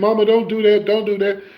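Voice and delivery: high, hollered, pleading scream. Retelling a teenage son's plea to his mother in the car: imitating someone hollering and screaming. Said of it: "he hollering and screaming".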